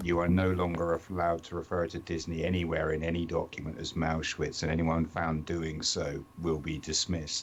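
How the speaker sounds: plain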